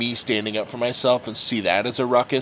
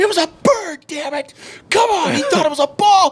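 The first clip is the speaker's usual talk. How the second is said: play-acted furious, all-out yelling blow-up; 7 dB louder than usual. Retelling his dad losing it over a balk call: retelling dad's furious outburst. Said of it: "just lost his shit".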